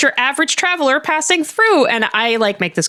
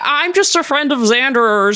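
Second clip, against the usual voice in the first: clumsy, bad fake American accent. Mimicking a man trying to pass as a normal guy, in a fake American accent. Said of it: "does his fake American accent".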